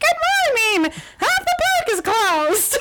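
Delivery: very high, theme-park mascot-style voice. Recalling a Disney wake-up phone call from Mickey Mouse: Mickey Mouse voice. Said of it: "it was Mickey Mouse voice that did it".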